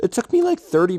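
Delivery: voice breaking mid-sentence, sudden high, loud crack. Telling viewers about setting up an audio waveform, voice cracking. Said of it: "voice crack".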